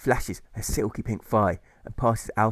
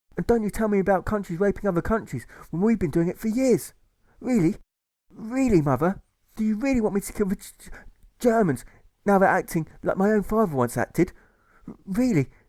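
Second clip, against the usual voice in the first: very high, stuttering, impassioned outburst; 10 semitones higher than usual. A son answers his mother as he grows stressed: stressed stammering reply. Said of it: "Alfie replies as he becomes stressed, / What about the b b b Boers, mother? What about the Z Z Zulus?".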